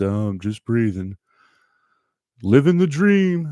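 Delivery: put-on glum, mopey voice of a gloomy old donkey. Imitating how many people answer a greeting, in an Eeyore voice. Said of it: "that Eeyore voice".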